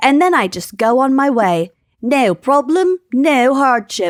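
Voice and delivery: put-on Australian accent, plain conversational delivery. Quoting what Harrison told NPR about donating blood, in an Australian accent as Harrison. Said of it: "my Australian accent".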